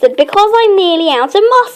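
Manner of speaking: plain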